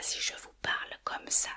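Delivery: soft, voiceless sotto voce murmur. Explaining sotto voce by speaking near the microphone, whispered. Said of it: "on est dans le murmure. Si je fais comme ça".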